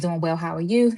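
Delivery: plain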